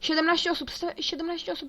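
high, loud, urgent, excited rush.

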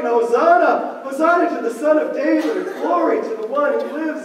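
ordinary delivery

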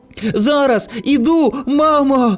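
happily calling out. Tonino answers his mother calling from the balcony, exclaiming joyfully. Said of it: "радісно вигукнув Тоніно".

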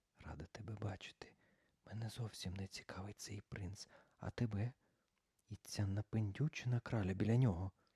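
muttered from mouth corner. During a colour game with Morgan, Sophie speaks aside to Charlina, muttered quietly from mouth corner. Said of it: "Софі тихенько пробурмотіла з самим кутиком рота".

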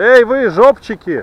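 loud, carrying shout.

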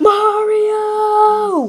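high, drawn-out shout, word stretched long. In a comedy skit, a character calls out to someone standing right in front of him, shouting. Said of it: "You don't have to shout!".

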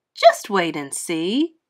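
plain reading voice

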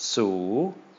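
su drawn out, pitch climbing. Demonstrating a high-class consonant with a long vowel: long rising tone on su. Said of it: "High class plus a long vowel is going to be a long rising tone".

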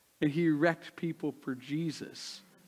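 ordinary delivery

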